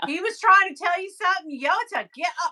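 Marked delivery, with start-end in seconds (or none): 1.6-2.5 put-on convincing, good Greek accent. Reacting to a story about a broken back, voicing a warning in a good Greek accent. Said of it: "good Greek".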